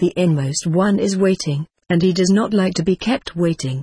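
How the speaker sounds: usual speaking voice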